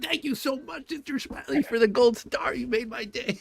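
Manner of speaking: very high, gushing, mock over-the-top gratitude. Retelling how teenagers answered the nun: mock exaggerated gratitude. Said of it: "exaggerated reactions".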